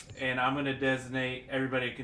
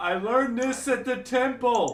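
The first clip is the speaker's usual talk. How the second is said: shrill, very high, loud yell; 11 semitones higher, 7 dB louder than usual. Playing a character in a shared game, yelling. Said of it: "I'm yelling as the".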